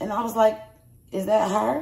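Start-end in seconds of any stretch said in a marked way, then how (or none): 1.1-1.8 put-on whisper, higher. Retelling asking whether the person on the phone was her: imitating own whisper.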